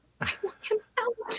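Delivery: very quiet, high, frightened, barely audible whisper. Retelling going up to a friend while scared, retelling a quiet whisper. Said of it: "real quiet and I go".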